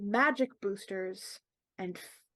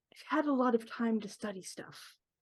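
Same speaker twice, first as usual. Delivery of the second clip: hushed, half-whispered stage whisper; 4 dB quieter than usual. Retelling a man's answer to the speaker's half-whispered question, retelling a half-whispered reply. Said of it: "He whispers back".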